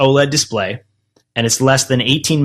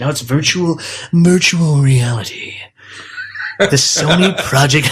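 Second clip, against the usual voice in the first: theatrical narrator-style voice. Talking about virtual reality, the speaker says it in a Half-Life guy voice. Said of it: "say it with a voice. I sounded like the Half-Life guy".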